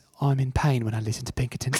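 soft, put-on British accent. Asked by another speaker to say it in a British accent: British accent. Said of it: "Can you say "in pain" in on Pinkerton in a British accent?".

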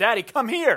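put-on high, bossy, commanding small-child voice calling out. Retelling a young son calling from the garage: sweet little voice. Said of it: "I hear him with his sweet little voice".

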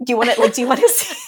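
put-on joking tone. Retelling her own joking reply to her husband on a walk: retelling own joking reply. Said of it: "jokingly, I said".

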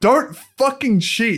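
mock furious, high-pitched, angry yelling. Speaker recounting watching a movie, retelling screaming at the tv. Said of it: "I was like screaming at the TV".

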